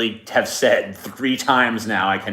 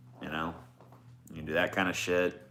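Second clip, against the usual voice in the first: ordinary talk, nothing marked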